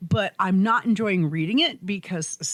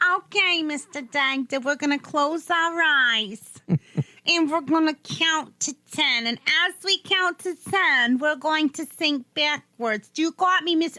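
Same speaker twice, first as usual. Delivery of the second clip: squeaky, high-pitched voice; 7 semitones higher than usual. Acting out someone hypnotizing a doctor: squeaky Fran Drescher voice. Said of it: "that fucking squeaky ass voice".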